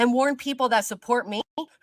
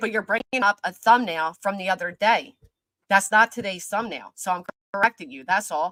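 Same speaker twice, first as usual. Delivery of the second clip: low, mad, angry tone; 4 semitones lower than usual. Correcting someone while your family and loved ones are going through this, angry. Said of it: "I'm sorry I sound angry".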